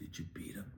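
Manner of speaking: sly, soft, unvoiced whisper.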